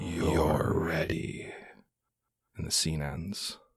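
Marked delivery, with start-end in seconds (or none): 0.0-1.5 haunting, eerie, echoey voice. Voicing another voice that is heard at scene end: haunting, echoey voice. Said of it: "a haunting, echoey voice".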